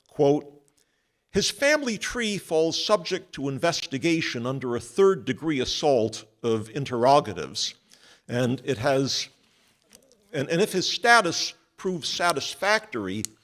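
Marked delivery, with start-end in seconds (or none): none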